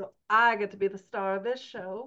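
loud, laid-on, put-on Southern diva accent. Co-host announcing they star in this episode on editing: southern diva voice. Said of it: "That was my Southern Diva voice".

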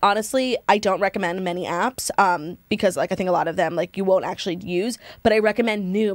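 ordinary delivery

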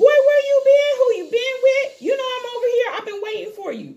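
mock, shrill, very high-pitched, loud angry cussing. Voicing the dog as she cusses him out: imitating a dog cussing someone out. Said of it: "she cussed him out like".

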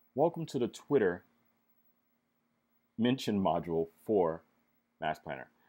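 slightly slow, unhurried, halting, broken-up delivery. Speaker introduces a software module to an audience, a little slow. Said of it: "I said that a little bit slow".

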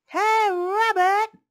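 very high, very loud, shrill yell. Narrator reading someone outside calling through the door for rabbit, yelled. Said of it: "someone yelled outside".

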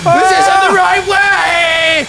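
high, slow, panicked scream.

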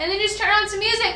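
fast, rattled-off delivery.

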